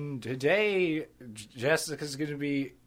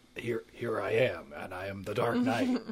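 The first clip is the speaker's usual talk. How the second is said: distinguished voice, pitched lower; 5 semitones lower than usual. Showing the ways to voice Batman: Kevin Conroy Batman voice. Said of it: "Kevin Conroy from the animated series, and he's just like".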